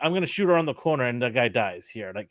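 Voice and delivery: ordinary talk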